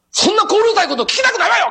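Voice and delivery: mock, very high, rapid, indignant angry outburst. Retelling what the housewife said while the newspaper explained, imitating an angry housewife. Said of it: "ガチャーン怒ったんですよね。".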